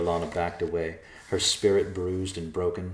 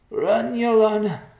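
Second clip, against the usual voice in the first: choked cry, very high pitch and very loud; 8 dB louder than usual. Narrator reads Nicholas's line to Yolana, choked out. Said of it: "Nicholas choked out".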